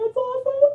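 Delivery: excited, voice shooting up.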